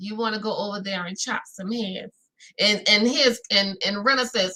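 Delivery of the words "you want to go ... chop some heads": gangster, mob-boss style voice. Retelling what Erica said at the table: Erica like a mob boss. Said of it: "like she was some type of mob, a, a mob boss".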